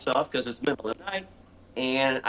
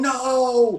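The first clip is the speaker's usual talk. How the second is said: long, drawn-out scream on the word "no"; 11 semitones higher, 4 dB louder than usual. Recounting turning on the light and finding a huge spider: retelling a scream. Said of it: "And I just scream".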